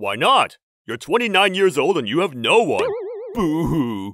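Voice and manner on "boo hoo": mock sob dripping with sarcasm. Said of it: "Your sarcasm hurts".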